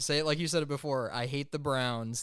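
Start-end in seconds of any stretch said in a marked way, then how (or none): 1.1-2.2 drawn-out, slow, deliberate, measured delivery. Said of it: "That's a [name] original".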